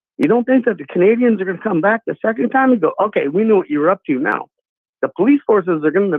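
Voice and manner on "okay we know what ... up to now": plain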